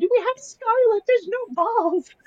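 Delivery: piercing, very high, startled scream. Retelling the moment just after giving birth: imitating own past scream. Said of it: "I screamed".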